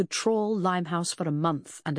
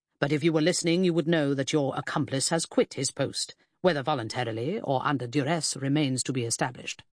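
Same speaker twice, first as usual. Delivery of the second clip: usual speaking voice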